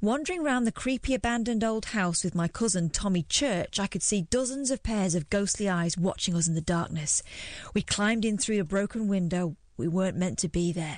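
ordinary talk

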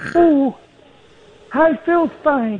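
put-on very high young pop-star voice. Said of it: "Paul with tight trousers?".

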